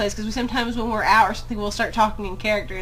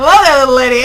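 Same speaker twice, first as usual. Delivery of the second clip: booming, very loud put-on American accent; 4 semitones higher, 12 dB louder than usual. Retelling how he breaks into it when talking to her: imitating Anton's American voice. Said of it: "cannot stand the American voice".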